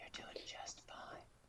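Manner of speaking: tender, soft, barely voiced whisper. Closing message to anyone listening, whispered into their ears: gentle whisper. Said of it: "I'm gonna just whisper it gently into your ears".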